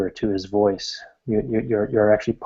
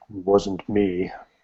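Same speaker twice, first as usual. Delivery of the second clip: voice sunk down into a deep bass; 3 dB quieter than usual. Recounting a voice that came out and spoke, in a deep basso voice. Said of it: "a deep basso voice come out and say".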